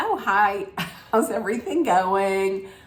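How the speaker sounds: casual, breezy, nonchalant tone. Retelling a cast member's greeting: imitating a casual, nothing-happened greeting. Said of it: "walked in really like nothing happened".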